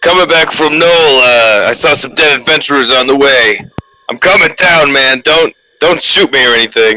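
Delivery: high-pitched calling-out character voice. Calling down into a dark dungeon entrance: yelling in Dick's voice. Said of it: "I'll yell down with, with Dick's voice as best as I can".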